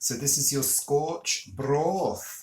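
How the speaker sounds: put-on poor Scottish accent. Commenting on a dish someone cooked, terrible Scots accent. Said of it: "my terrible Scots accent".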